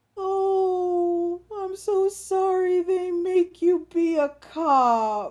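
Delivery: gentle, heartbroken, very high, slow and drawn out. Retelling tipsy people petting a police horse, imitating a heartbroken, gentle voice. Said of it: "said in this heartbroken, gentle voice".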